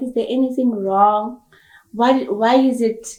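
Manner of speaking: normal talking voice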